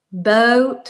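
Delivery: "boat" drawled with long Southern vowel. Describing the Southern accent's long vowels: drawn-out Southern vowel in boat. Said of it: "all of the vowels are really long and drawn out".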